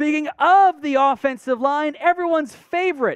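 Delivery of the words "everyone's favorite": heavy, dripping, ironic sarcastic tone. Introducing a lineman to viewers, dripping with sarcasm. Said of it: "dripping with sarcasm".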